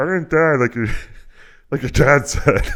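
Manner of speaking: very high, very loud, shrill shriek. Voicing a dead mother in a game retelling: Muppet-like voice. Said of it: "Why is she talking like fucking a Muppet?".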